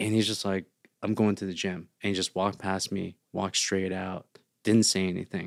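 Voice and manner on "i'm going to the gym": quieter, put-on, disappointed dad voice. Retelling what a disappointed father said while walking past: imitating a disappointed father.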